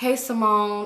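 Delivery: imitated, sad-sounding voice. Retelling a friend's phone greeting: imitating a sad voice. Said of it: "She sounds sad".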